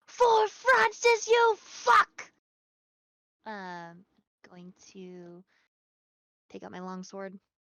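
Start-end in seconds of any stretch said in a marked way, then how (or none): 0.2-2.3 shrill, very loud, high-pitched shout. Moving into melee in a game and calling out in character: shouting. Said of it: "And I'm shouting".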